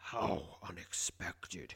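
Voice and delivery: deep, rumbling creature voice. Narrator voicing a human-sized rabbit addressing the player, in a deep rumbling voice. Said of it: "he says in a deep, rumbling voice".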